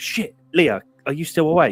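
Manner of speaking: high, loud, frantic, panicked voice. Retelling being stuck in a costume head: imitating own panicked swearing. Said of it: "panicking, going".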